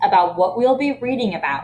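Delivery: ordinary delivery, nothing marked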